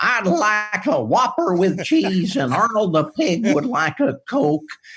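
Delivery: very high, goofy, weird, silly put-on voice. Retelling ordering at a drive-through on friends' dare, in a weird silly voice. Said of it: "ordering a weird voice".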